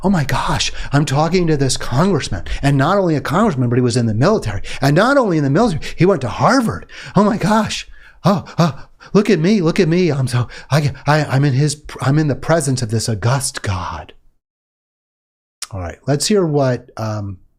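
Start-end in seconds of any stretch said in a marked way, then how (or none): 0.0-14.1 put-on awestruck stammering. Mocking a man talking to the congressman, imitating him stammering in awe. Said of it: "he's like in awe".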